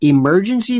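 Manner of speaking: firm, heavy stress punched onto emergency. A channel host addressing viewers about an order, stress on emergency. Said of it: "Emphasis on the word emergency".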